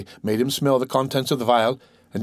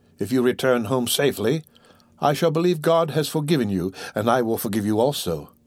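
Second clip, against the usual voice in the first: plain reading voice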